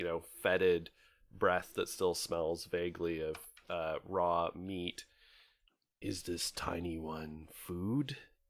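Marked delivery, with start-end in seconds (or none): 6.0-8.2 looming, slow, menacing, threatening half-whisper. Voicing a creature leaning down to a player: half-whispering menacingly in character. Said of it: "leans down and then whispers".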